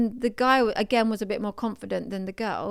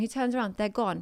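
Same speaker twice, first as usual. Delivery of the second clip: usual speaking voice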